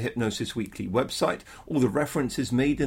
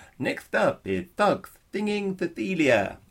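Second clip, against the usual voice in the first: affected, fake lisp; 5 semitones higher than usual. Re-enacting a Top of the Pops introduction, with a put-on lisp. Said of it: "That was affected, by the way".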